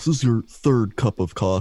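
put-on scolding voice. Picturing Sam doing the job, the speaker does a mock-scolding Sam impression. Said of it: "pictured Sam doing it like that".

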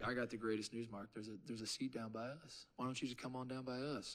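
put-on Southern accent. Retelling a first grade teacher inviting you to sit by them, imitating a southern accent. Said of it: "It's a Southern accent where you think".

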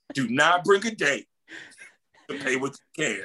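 mock dead-serious, intense, emphatic tone. Retelling another speaker's advice about dates: imitating an intense warning. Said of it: "with the intensity of".

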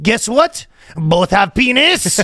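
put-on butch French woman's accent. Speaker imitating how a woman podcaster talks, butchy French-accented voice. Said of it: "That's how the girl talks. She got a very butchy, ... French voice".

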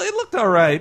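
"looked all right" lifted. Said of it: "repeats phrase in two ways".

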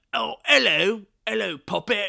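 very loud, high, bad fake Cockney accent. Describing a movie's dubbing, attempting a bad Cockney accent. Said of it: "I can't do a Cockney accent".

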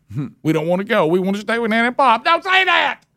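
play-acted children's high, swooping wailing scream. Describing kids told it's time to leave Nana and Pop's, imitating them screaming. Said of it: "they start screaming".

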